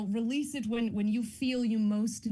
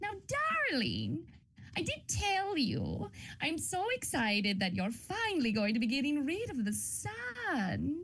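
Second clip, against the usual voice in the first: put-on high, slow, wicked-sounding old woman's voice; 6 semitones higher, 3 dB quieter than usual. Showing a character voice from a House of Spirits role: evil old lady voice. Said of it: "the evil old lady voice I did for House of Spirits last year".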